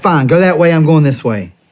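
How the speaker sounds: mock fed-up screaming. Retelling a roadside argument with a wife: retelling own screaming. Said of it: "I'm screaming".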